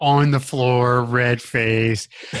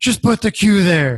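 mock, put-on, irritated, pissy snap, much higher; 7 semitones higher than usual. Retelling how Oscar got pissy about the queue, imitating Oscar's pissy snap. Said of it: "Oscar gets really pissy about the queue".

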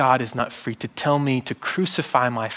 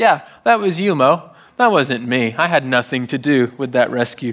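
put-on sarcastic voice, louder; 5 dB louder than usual. Retelling God's words to Moses about Israel: sarcastic God voice. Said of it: "God is also a little sarcastic".

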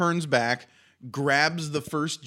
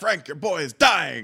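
mock frantic shout, urgent yet light. Retelling a scene where McGee shouts at Frank: imitating someone shouting. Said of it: "McGee is shouting at him".

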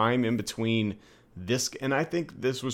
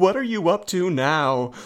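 slow, high, worried, fussing voice; 7 semitones higher, 6 dB louder than usual. Retelling what a game character always says when passed: imitating a concerned voice. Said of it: "she always sounds so concerned about me".

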